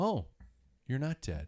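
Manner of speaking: put-on flat, dry, emotionless deadpan voice. Retelling what a wife said on seeing the speaker up: imitating Michelle's emotionless tone. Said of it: "with no emotion".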